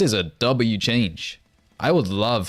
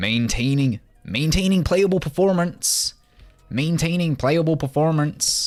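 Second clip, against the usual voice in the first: high, nerdy nerd-style voice; 7 semitones higher than usual. Reading a game update aloud for chat, in a nerd emoji voice. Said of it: "Set in set in a nerd emoji voice".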